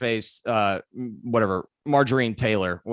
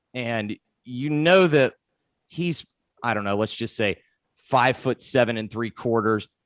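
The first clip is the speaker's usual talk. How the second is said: normal talking voice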